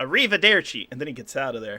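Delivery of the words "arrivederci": put-on typical American accent. Voicing a character saying goodbye: typical American voice. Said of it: "Just same voice".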